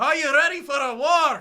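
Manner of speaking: put-on Scottish accent, booming, loud, slow. Reading out a quiz question to a contestant, in a Scottish accent. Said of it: "you need to do your best Scottish".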